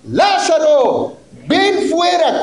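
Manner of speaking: authoritative, commanding, high, swooping voice. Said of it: "con voz de autoridad".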